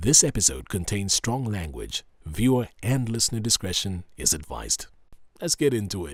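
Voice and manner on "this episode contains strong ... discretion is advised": formal announcer voiceover voice. Show host reads the episode's content disclaimer in his voiceover voice. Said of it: "in my voiceover voice".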